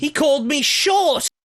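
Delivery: very high-pitched, sing-song, swooping voice. Narrating a voice heard from behind a building: high-pitched voice. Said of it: "you hear a high-pitched voice say".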